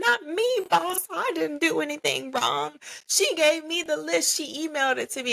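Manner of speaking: acted-out, very high, weepy, tearful pleading. Retelling a coworker's tearful denial to the boss: imitating someone tearfully pleading.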